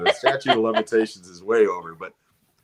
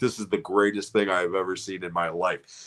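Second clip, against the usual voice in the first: ordinary delivery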